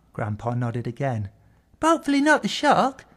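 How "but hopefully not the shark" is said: light-hearted, very high pitch. Grandpa talking with Owen, smiling. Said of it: "he smiled".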